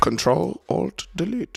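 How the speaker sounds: played-up Indian-accented delivery. Streamer addressing viewer Jeremiah, says this in a put-on Indian accent. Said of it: "Again, Indian accent".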